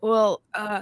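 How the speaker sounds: loud mock macho man voice. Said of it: "in playing a man".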